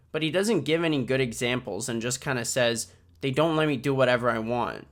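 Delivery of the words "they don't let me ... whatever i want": usual speaking voice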